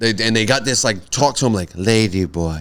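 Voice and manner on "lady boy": put-on low, calm, seductive tone. Describing how they talk to him, imitating a calm, seductive voice. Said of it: "very calm and, like, seductive feel".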